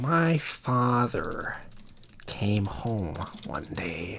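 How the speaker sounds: very slow, deliberate, drawn-out drawl. Showing the others how the Joker would sound: Joker voice. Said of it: "the Joker would sound like this".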